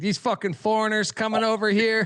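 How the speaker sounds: put-on high old-timer voice, old man from the 1940s. Mocking a co-host's pick: imitating Matt as an old person from the 1940s. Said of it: "just like an old person from, like, the nineteen forties".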